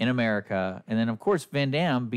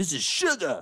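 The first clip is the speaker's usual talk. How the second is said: put-on French accent in a higher pitch; 5 semitones higher than usual. Retelling a movie's opening scene of a drug deal under a bridge: french accent. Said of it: "a French accent".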